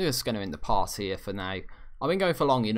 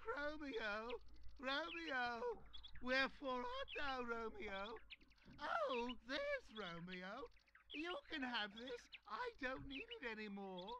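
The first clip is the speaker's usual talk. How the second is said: bad put-on girl voice, higher and quieter; 18 dB quieter than usual. Voicing a game character calling for romeo: poor girl impression. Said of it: "that was a poor girl impression".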